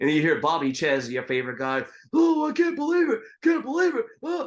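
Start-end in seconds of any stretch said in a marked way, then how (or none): 2.1-4.5 hoarse, croaky, very high, loud cry. Retelling a boxing broadcast, quoting the commentator Bobby Chez: imitating Bobby Chez's hoarse voice. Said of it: "horse's voice that he did".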